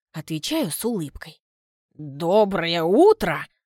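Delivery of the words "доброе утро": loud, mocking, incredulous, sarcastic. A man replies to the narrator's morning greeting; sarcastic. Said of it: "Уточняет с сарказмом в голосе".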